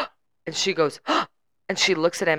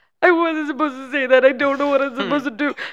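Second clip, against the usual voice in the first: put-on near-tearful voice, higher; 7 semitones higher than usual. Retelling a guest's apology after a spoiler: imitating someone on the verge of tears. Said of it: "on the verge of tears".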